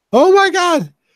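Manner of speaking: very high, loud shocked shriek, sudden outburst.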